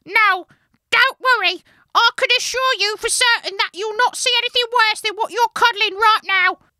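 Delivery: shrill little elf voice, very high and very loud. Reading the brownie's reassuring line aloud from the story: Dobby voice for the brownie. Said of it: "I need a voice for the brownie now".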